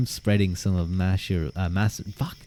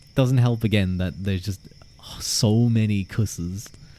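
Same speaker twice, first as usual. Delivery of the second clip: ordinary delivery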